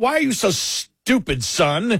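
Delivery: acted livid scolding tone. Retelling how the parents reacted to the good grades: imitating livid parents. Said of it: "They were livid".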